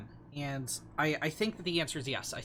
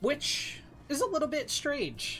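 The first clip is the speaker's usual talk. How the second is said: voice breaking, squeaking very high; 11 semitones higher than usual. Commentating a match, voice cracking. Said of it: "that voice crack".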